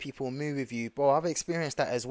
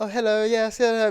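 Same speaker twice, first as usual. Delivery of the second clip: light, raised, pitched-up voice; 8 semitones higher, 6 dB louder than usual. Speaker shows how he lightens his voice to seem less threatening: lighter voice. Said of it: "making my voice lighter".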